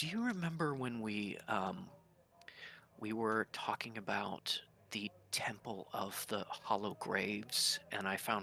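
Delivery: quiet, brought-down voice. A character in the archive asks a companion about earlier findings, in a lowered voice. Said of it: "lowers his voice a little bit".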